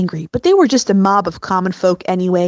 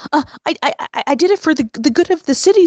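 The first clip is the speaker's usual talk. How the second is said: stammering, stuttering in a much higher pitch; 7 semitones higher than usual. Narrator reads the minister answering the Tsar's complaint, stammering. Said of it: "stammered the minister".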